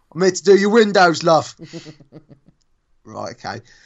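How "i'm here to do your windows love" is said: put-on Essex accent on every word, loud, high. Criticizing a man's looks and accent, the speaker puts on an essex accent. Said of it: "And the Essex accent".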